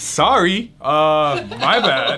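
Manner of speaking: sudden, high, loud, worried mock tone.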